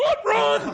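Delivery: frantic, alarmed shout. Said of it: "And we're like".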